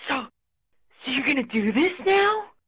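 drawn-out, slow, high stage half-whisper. Retelling what the boss said in the office: imitating someone half-whispering.

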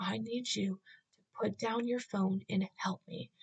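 acted freaking out. Retelling a panicked moment at a coffee shop, acting out freaking out. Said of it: "I was freaking out".

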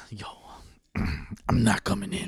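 hushed, slow, breathy, drawn-out whisper. Acting out calling off work by phone: Batman voice. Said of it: "Like Batman?".

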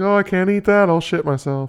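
put-on little old lady voice, very high. Speaker mimicking what old people tell him, old lady impersonation. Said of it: "Great old lady impersonation".

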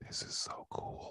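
drawn-out, slow, hushed whisper, barely audible. Retelling a sister leaning over during a movie: imitating a whisper. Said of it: "she just whispers over".

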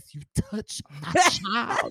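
showy diva voice, very loud, high, swooping. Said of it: "Beyonce voice".

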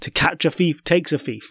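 plain

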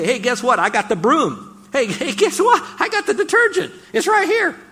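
excited, high, loud, laughing glee.

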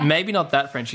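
ordinary delivery

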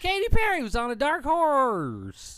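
high, slow put-on sports announcer voice. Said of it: "You sound like when Will Ferrell does that fucking impersonation".

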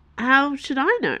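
defensive. A woman answering a question about a girl asking for her, defensive. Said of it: "Dana said defensively".

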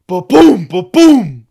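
loud booming noise, like a crash.

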